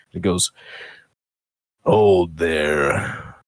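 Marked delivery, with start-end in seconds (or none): 1.8-3.2 low grumbling tree voice. A game narrator voices a tree halting the approaching players; grumbling tree voice. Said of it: "you hear this grumbling voice".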